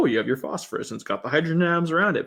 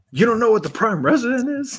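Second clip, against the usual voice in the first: mock very high, condescending, talking-down disbelief; 9 semitones higher, 4 dB louder than usual. Acting out his reply to a question: imitating condescending disbelief. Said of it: "And he'll be like".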